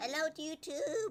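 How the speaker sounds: voice cracking. Greeting YouTube in the morning: voice cracking. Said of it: "my voice cracked".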